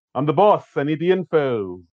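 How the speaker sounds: acted evil villain voice. Quoting a movie villain complaining about not getting what he wanted: Doctor Evil voice. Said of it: "that's pure Lorne".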